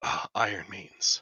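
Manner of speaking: quick whisper under breath. Voicing a character who sees the strangers, whispered under breath. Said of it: "you hear whisper".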